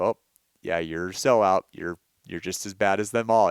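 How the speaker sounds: ordinary talk, nothing marked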